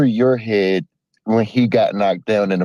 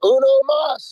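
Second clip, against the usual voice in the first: put-on scream, higher. Retelling yelling at a phone while watching the fight: imitating own past screaming. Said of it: "I was over here screaming".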